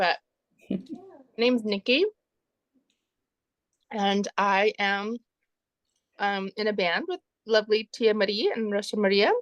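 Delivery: speaking with a mouth full of food. Introducing yourself to a group while snacking, talking while chewing. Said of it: "I'm snacking and chewing".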